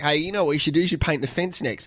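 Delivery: normal talking voice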